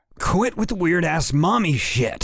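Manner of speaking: shrill, very high-pitched yelling. A man knocked to the ground answers a taunting foe, yelled. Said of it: "Crinnan yelled".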